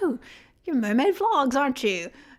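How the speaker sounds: clumsy, terrible, put-on Australian accent. Retelling a woman in an elevator recognizing them: terrible australian accent. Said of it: "this chick with an Australian accent was like".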